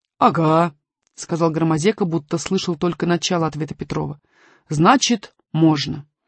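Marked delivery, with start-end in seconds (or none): none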